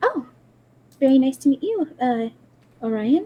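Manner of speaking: meek, very mousy, timid little voice. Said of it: "very mousy voice".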